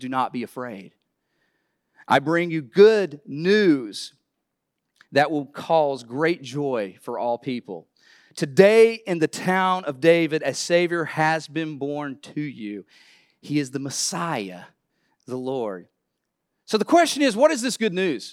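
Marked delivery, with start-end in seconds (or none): none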